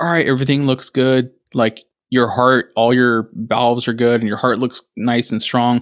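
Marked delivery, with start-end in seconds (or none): none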